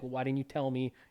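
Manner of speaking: put-on sad character voice. Retelling a game scene where a character feels left out: imitating a sad character. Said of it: "he's all sad 'cause he's like".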